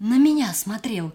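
frightened. In a dark cave, a girl points and speaks, frightened. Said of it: "а сама боится в ту сторону голову повернуть".

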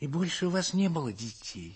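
shy, gentle, timid little voice. The lady puts a question to the man who has just answered: timid question. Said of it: "робко спросила барыня".

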